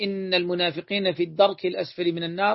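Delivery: plain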